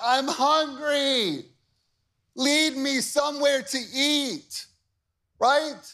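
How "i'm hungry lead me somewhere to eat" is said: mock slow, high, drawn-out whiny complaining voice. Speaker acting out how they whine all day long, imitating a whine. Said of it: "They whine".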